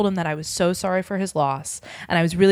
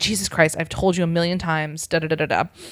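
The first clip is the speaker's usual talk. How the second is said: ordinary delivery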